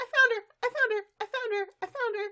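very high, shrill, squealing yell repeated. Retelling the scene where Pinkie Pie finds Applejack: imitating Pinkie Pie yelling. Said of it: "Pinkie Pie starts yelling".

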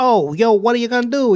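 high, wise-guy gangster tough-guy voice. Describing what audiences hear in an actor's accent: Joe Pesci wise-guy voice. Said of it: "all you do hear is wise guys".

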